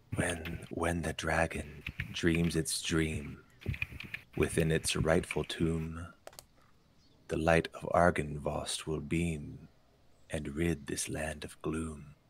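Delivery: hushed, whispering stone gargoyle voice. Narrator voicing a gargoyle to players who get close to it: whispering gargoyle. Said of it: "it whispers".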